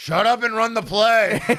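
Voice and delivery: mock annoyed, loud, high coach bark. Recalling how coaches got pissed at football practice, imitating Howard Schnellenberger pissed off. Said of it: "he'd just be like".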